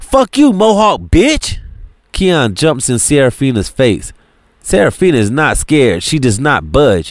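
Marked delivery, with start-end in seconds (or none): 0.0-1.6 very high, sudden, swinging, snapped delivery. A narrator reads a man snapping back at a woman who insulted him. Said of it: "Keon snaps".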